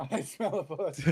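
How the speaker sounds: loud, slow yelling through laughter. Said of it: "Why am I yelling?".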